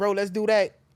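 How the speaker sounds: usual speaking voice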